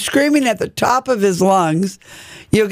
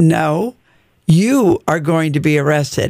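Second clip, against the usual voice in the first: utterly composed, dead calm, low unruffled voice; 5 semitones lower than usual. Retelling how the listener answered an angry man threatening arrest, imitating a very calm voice. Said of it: "In the most calm voice".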